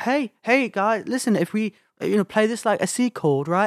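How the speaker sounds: high, light, agreeable musician voice. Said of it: "Paul was always talking fast".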